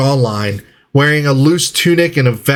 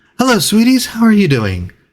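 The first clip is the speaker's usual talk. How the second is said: higher-pitched woman's voice; 7 semitones higher than usual. Voicing a woman who greets the group at the bar, voicing a woman character. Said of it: "You see this human female".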